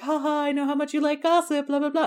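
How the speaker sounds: coy, cagey tone, a bit high-pitched. Retelling a scene where Mister Knightley teases about news: coy Mister Knightley voice. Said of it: "he's being all, like, coy".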